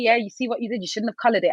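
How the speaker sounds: plain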